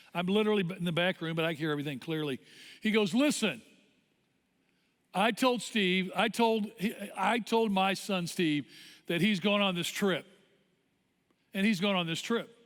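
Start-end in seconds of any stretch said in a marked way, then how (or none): none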